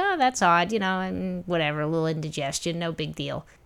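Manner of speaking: normal talking voice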